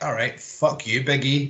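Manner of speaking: ordinary delivery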